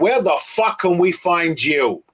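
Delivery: New Jersey accent. A host puts the closing question to a departing guest in a put-on Jersey-Brooklyn accent. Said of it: "ask you the question in an accent".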